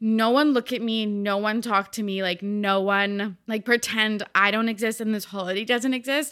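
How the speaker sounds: ordinary delivery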